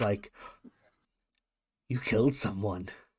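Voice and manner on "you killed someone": put-on acted wide-eyed kid voice. Voicing a sibling who looks up in wonder: voicing Gracie in wonderment and awe. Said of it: "eyes wide and full of this wonderment and awe".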